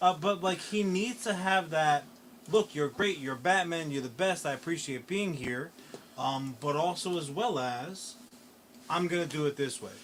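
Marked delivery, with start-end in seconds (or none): none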